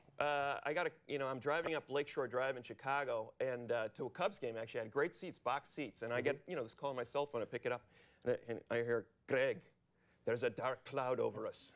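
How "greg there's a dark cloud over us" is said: put-on heavy Irish accent, pitched lower. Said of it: "this heavy Irish accent".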